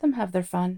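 ordinary delivery, nothing marked

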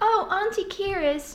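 put-on childlike voices. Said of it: "they are like".

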